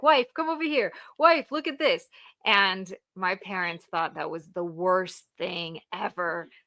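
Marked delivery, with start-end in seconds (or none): 0.0-2.1 high, loud, thrilled, excited calling out. Telling a story, the speaker imitates her husband calling her wife: imitating an excited husband. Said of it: "And he was so excited".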